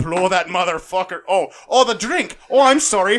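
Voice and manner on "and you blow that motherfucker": put-on Irish accent, louder. Explaining a drink recipe after being asked to do Irish: Irish accent. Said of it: "Can you pull out your Irish?".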